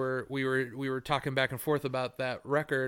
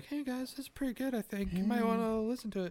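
very high, mild, gentle, soft-sell tone; 9 semitones higher, 4 dB quieter than usual. Retelling recommending a new record to others: imitating own gentle suggestion. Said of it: "just kind of very gently being like".

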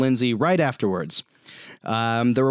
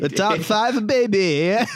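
put-on Kazakh accent, higher; 7 semitones higher than usual. Retelling another player's attempt: Borat-like voice. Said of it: "Spencer sounded more like Borat".

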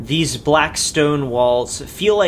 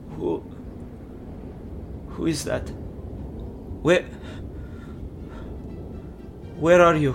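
piping up very softly; 3 semitones higher, 7 dB quieter than usual. A flinching figure, after heavy breathing, pipes up asking who is there, very soft. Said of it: "he pipes up very softly".

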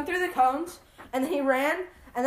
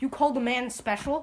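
ordinary talk, nothing marked

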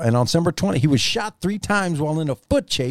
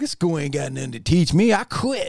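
play-acted swaggering know-it-all, cocky and dismissive. Retelling own words on quitting school: imitating own cocky younger self. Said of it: "so I was cocky".

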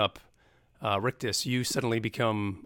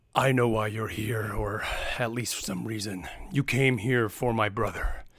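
put-on big tusked monster voice. Game narrator voicing a tusked figure leaning into the cage, big tusked creature voice. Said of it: "he just says".

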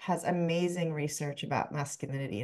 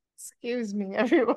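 mock crying, higher and louder; 6 semitones higher, 5 dB louder than usual. Retelling bawling on the subway: imitating own past bawling. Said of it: "bawling and I'd be like".

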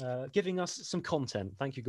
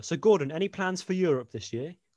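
ordinary talk, nothing marked

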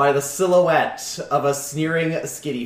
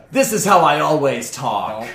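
put-on dj voice, unusual way of talking; 4 dB louder than usual. Asked why they talk like that, the rival DJ answers in a changed voice. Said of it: "So obviously they've got their Skitty helmet on with the LEDs going wild. And they also have a jean jacket that has LED displays".

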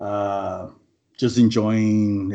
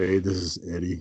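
soft attempt at a deep voice, falling short; 3 semitones lower, 5 dB quieter than usual. Podcaster showing the voice they'd use for the ladies: bad Vin Diesel impression. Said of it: "that shit doesn't even sound deep at all".

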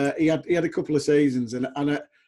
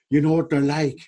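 put-on Irish accent; 3 dB louder than usual. Retelling what a player said while warming up: Irish accent imitating Dermot. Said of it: "in his Irish accent".

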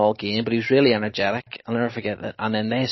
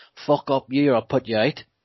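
put-on broadest Liverpool Scouse accent, laid on thick; 3 semitones higher than usual. Retelling a football fan's threat to a heckler: strongest Scouse accent. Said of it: "in the strongest Scouse accent".

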